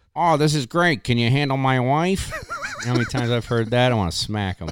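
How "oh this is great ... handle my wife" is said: put-on Rhode Island accent. Retelling what people ask about the service, Johnny Rhode Island accent. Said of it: "I like how the accent just popped in there".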